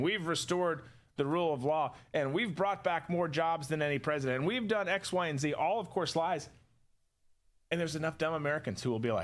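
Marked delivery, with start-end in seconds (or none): none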